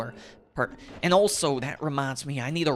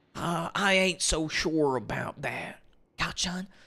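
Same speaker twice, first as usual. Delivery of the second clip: put-on light cowboy Texan drawl; 2 semitones higher than usual. Trying out how a character would sound as a cowboy Texan: cowboy Texan voice. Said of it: "a little bit of a cowboy Texan".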